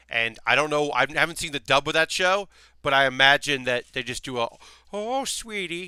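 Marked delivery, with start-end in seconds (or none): 4.9-5.9 put-on very high-pitched elderly granny voice. Guessing how an English dub would voice the character, in an old granny voice. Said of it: "they just do an old granny voice".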